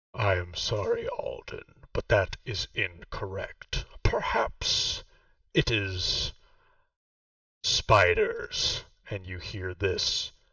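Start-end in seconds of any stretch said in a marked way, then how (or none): 0.2-8.9 deep voice throughout. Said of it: "this deep voice all around you".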